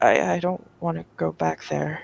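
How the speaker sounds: speaking very softly. A character answers after someone vows to punish her pursuers, very soft voice. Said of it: "Demi will say very very softly".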